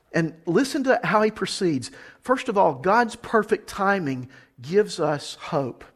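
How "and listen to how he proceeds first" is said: usual speaking voice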